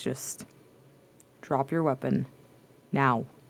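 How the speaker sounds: icy, cold, flat monotone. Tabletop game player speaking as their character to another character: cold, flat voice. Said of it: "in a very like cold, flat voice".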